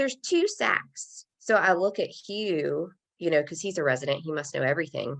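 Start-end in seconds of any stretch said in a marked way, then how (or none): 0.0-1.2 sweet, very high little voice. Retelling what the ultrasound tech said, imitating a sweet voice. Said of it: "she has this sweet voice and she says".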